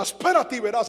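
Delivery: mock angry voice, acted-out anger. Retelling what he said to his wife on getting back from a trip, retelling angry words. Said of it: "yo empecé con una ira".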